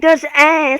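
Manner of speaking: small whiny voice. Retelling what Duck said, imitating Duck's little whiny voice. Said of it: "In her, like, little whiny voice".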